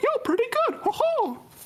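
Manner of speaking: bad put-on cartoon mouse voice. Greeting a guest for an absent co-host: bad Mickey Mouse voice. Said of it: "That's my bad, Mickey Mouse".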